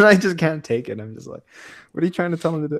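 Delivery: plain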